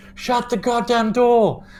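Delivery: high, slow, drawn-out crowd yell. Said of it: "half of the tavern turns and goes".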